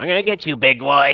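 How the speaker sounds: put-on high-pitched goblin creature voice. Voicing a goblin during a tabletop game turn, in a goblin voice. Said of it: "that was a good vo- goblin voice".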